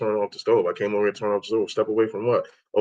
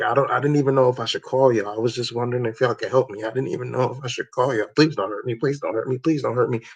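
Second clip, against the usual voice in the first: frightened, terrified, begging pleading voice. Speaker retells a woman who called the cops, retelling a terrified plea. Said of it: "you could hear it in her voice".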